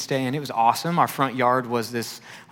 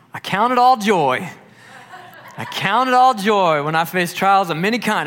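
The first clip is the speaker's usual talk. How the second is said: put-on strong Southern accent, laid on, pitched high; 7 semitones higher, 5 dB louder than usual. Retelling what a cheerful man said during a disgusting cleanup: imitating Larry's Southern accent. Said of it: "And he was real Southern".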